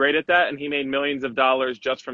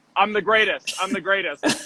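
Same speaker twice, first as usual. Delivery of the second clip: put-on, tongue-in-cheek, half-sarcastic bragging; 6 semitones higher than usual. Retelling saying it again after another made shot: imitating own half-sarcastic boast. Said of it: "it's half sarcastic".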